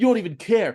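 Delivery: yelling. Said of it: "yelling at them".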